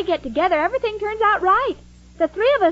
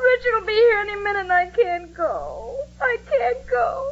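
crying, tearful, weeping; 4 semitones higher than usual. Jane speaking to two others who offered to help her, crying. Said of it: "don't cry".

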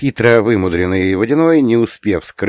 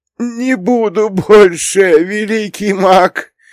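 scared, very high, slow croaking plea; 13 semitones higher, 3 dB louder than usual. Reading a story, the water spirit answers the mage who struck him; frightened croak. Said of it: "испуганно проквакал водяник".

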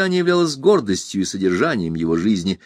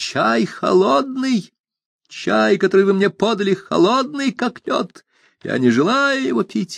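high, cracking voice, breaking on the words; 9 semitones higher than usual. A narrator reads a character's outburst, voice breaking. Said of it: "срывающимся голосом".

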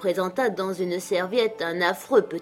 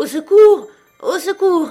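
frantic, wild cry, very high and very loud; 10 semitones higher, 12 dB louder than usual. Reading a story, the narrator pounds a wall with both fists, shouting wildly. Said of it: "vociférant".

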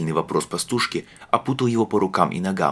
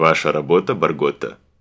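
sarcastic, caustic, biting tone; 3 semitones lower, 4 dB louder than usual. Narrator reads the legate coming up from the side to question Bargotta, caustically. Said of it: "язвительно спросил легат".

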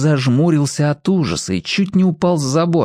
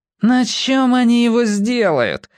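snide, sarcastic, needling tone, pitched up; 8 semitones higher than usual. Sanya chimes in after Rudik's scoffing, asking a snide question. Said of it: "ехидно осведомился Саня".

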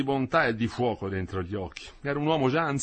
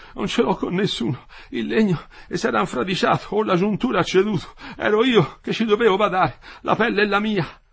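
gasping for breath, panting, higher; 7 semitones higher, 6 dB louder than usual. Quinto, in pain, answers: panting. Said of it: "ansimava Quinto".

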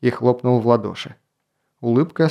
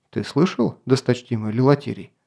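usual speaking voice

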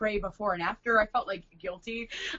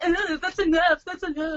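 put-on mocking tone, higher; 8 semitones higher, 3 dB louder than usual. Retelling how a costumed performer repeated her words back: imitating a mocking echo. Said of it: "mocked me".

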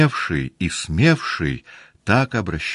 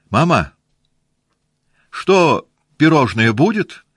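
bold, cheeky, merry, high-pitched cry of glee; 9 semitones higher, 6 dB louder than usual. Natasha calls out to her mother before the guests, shouting boldly and merrily. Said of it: "закричала Наташа уже смело и капризно весело".

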